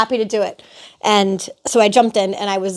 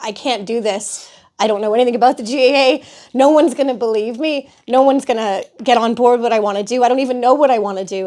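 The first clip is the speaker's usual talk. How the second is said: hysterical, overwhelmed sobbing outpouring; 2 semitones higher than usual. Retelling a phone call during a meltdown: imitating hysterical crying. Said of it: "literally hysterically crying".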